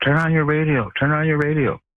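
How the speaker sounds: acted-out yelling. Retelling a man yelling out his truck window while driving away: retelling a yell. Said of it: "he's yelling as he's driving away out his window".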